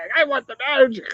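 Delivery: high-pitched, angry, yelling rant. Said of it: "this guy started yelling at the cashier".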